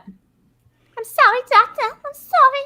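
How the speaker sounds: very high voice with New York vowels. Discussing whose voice a character sounds like, doing an Ellen Greene impression. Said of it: "How many people talk like that?".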